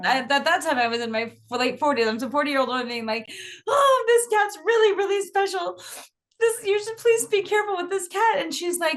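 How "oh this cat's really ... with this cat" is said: tearful, pitched-up pleading voice. Recounting a hard day parting with her special cat, retelling a tearful plea. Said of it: "I said through tears".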